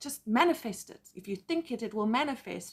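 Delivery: ordinary talk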